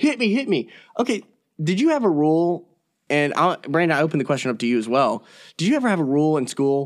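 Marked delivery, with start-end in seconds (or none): 0.0-0.7 shrill, very high screaming. Retelling a face-to-face standoff in the locker room: imitating someone screaming. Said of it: "we're, like, screaming".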